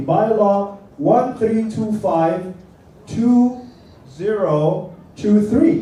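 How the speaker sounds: very slow, deliberate, digit-by-digit number readout. Speaker tells the audience to read the bylaw, giving its number very slowly. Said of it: "I'll say it very slowly".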